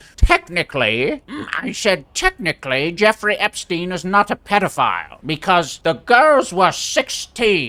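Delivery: put-on British television presenter delivery. Imitating a guy on british television defending a technicality: imitating a british tv presenter. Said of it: "that one guy on British television who was like".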